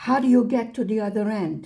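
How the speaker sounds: acted-out yelling. Retelling a moment of frustration, retelling screaming at the screen. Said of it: "like me screaming at the screen".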